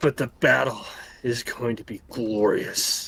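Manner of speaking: deep rumbling dragon voice. Game master voicing a dragon answering the party on a battlefield, rumbling dragon voice. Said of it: "he rumbles and he goes".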